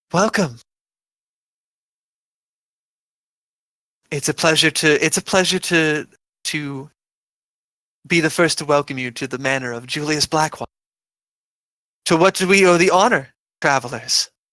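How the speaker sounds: breathy warm voice. A game master voices a woman welcoming travelers to a manor, breathy and warm. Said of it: "in a voice that's breathy and warm".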